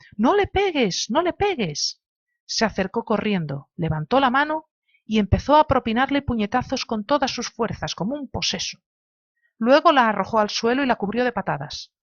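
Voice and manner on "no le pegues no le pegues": frantic, despairing, high-pitched desperate shout. Reading a story aloud, a character begs someone to stop hitting: desperate shout. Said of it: "gritó con voz desesperada".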